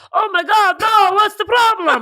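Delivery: very high, slow, cartoonish put-on Swedish accent. Retelling what a man said after she started bawling in the car, Swedish Chef accent. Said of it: "He sounded like the Swedish chef".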